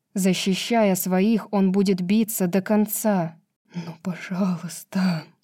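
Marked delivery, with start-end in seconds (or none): 3.8-5.3 shaky, hushed, trembling half-whisper with quivering voice. Ethan begs, in a trembling half-whisper. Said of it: "дрожащим голосом прошептал Итан".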